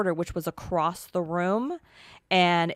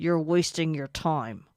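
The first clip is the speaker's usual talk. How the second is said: put-on loud voice through clenched teeth. Retelling what a man's voice said on an investigation recording: imitating a loud clenched-teeth voice. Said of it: "he says it just like that and almost as loud as that".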